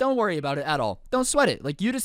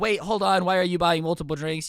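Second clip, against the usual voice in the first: ordinary delivery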